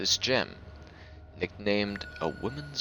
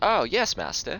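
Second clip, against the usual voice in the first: put-on light, barely-there British accent, pitched up; 8 semitones higher, 7 dB louder than usual. Describing a movie rewatch, quoting Anakin in his light, almost British accent. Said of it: "really light, almost British accent".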